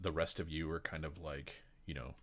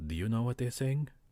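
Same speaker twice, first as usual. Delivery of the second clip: whispering, higher pitch; 8 semitones higher, 9 dB louder than usual. Voicing overheard people in a tavern scene, whispered line.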